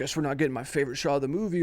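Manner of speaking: put-on passive-aggressive voice. Retelling what directors have said on set: imitating a passive-aggressive director. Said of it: "passive aggressive".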